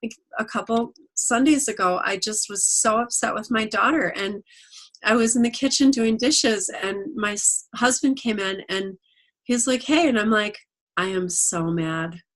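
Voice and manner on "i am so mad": mock unbothered deadpan, very slow, flat and calm. Speaker retells telling her husband in the kitchen, retelling saying it calmly. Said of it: "That's exactly how I said it".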